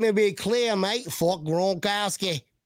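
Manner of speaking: put-on Australian accent. Trying an accent that comes out australian, put-on australian accent. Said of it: "That was not like Southern".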